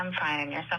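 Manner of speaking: low, deflated, let-down, flat inflection. A woman answering a caller's greeting on a sales call, deflated inflection. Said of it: "Did you hear the inflection in her voice?".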